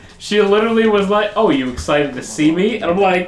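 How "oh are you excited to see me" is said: ordinary talk, nothing marked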